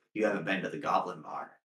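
soft, passing half-whisper aside. Voicing a passing female Nagani speaking to a player: half-whispering. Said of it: "walks past you and whispers".

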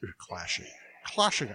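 whispered in an acted, breathy voice. Describing a classic pirate movie, slipping into a Sean Connery voice. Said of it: "I'm in my Sean Connery voice".

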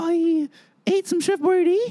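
very high, slow, put-on little boy voice. Telling a joke from when they were eight: little boy voice. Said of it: "I'll tell it in a little boy voice".

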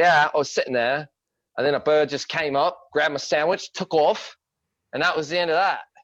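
put-on high-pitched, well-done Australian accent. Retelling what an Australian told you, in an Australian accent. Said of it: "your Australian accent is top notch".

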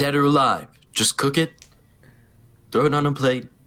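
whispering. Whispering to the innkeeper across the table in character: whispering. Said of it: "I start whispering to him".

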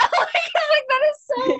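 very high, slow voice on the verge of tears. Speaking about a beloved grandma, the speaker is tearing up. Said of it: "I'm tearing up right now".

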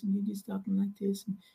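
very quiet, soft-spoken, small talking voice. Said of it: "a really quiet voice".

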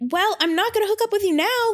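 angry gym bro voice, high, fast, outraged.

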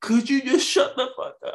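very high-pitched, fed-up, heated delivery. Retelling how a buddy snapped at an obnoxious guy at a wrestling event; retelling an angry yell. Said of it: "He was so heated".

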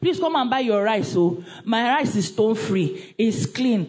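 ordinary talk

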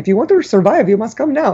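imitated Indian accent. Speaker retelling someone calling out from the kitchen, Indian accent. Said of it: "Indian accent".

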